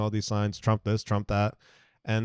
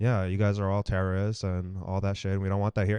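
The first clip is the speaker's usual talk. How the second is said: put-on very calm, even, matter-of-fact delivery. Retelling what a man said to the group, imitating his very calm voice. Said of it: "he was just in the calmest voice".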